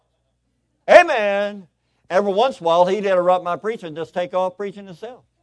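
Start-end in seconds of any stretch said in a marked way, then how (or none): 0.9-1.7 loud, high-pitched shouted word. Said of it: "he'd go".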